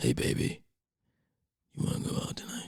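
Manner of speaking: whispered, roughened and breathy near-whisper. Showing how their allergy-congested voice sounds now, rugged voice. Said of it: "sounds a little more rugged".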